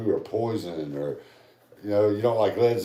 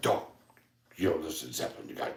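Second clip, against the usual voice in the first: breathy, confiding, half-whispered storyteller voice; 5 semitones lower, 7 dB quieter than usual. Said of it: "in his Joey Diaz voice".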